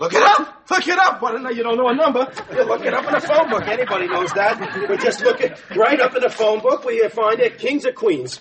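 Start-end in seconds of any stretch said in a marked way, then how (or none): 0.0-1.2 high, loud upset outburst. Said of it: "You're getting so upset".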